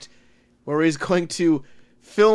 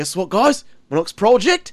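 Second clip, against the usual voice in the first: put-on enthusiastic, eager Australian accent. Imagining a dead famous figure announcing a new project: Steve Irwin impression. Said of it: "Steve Irwin, if he was still alive, was like".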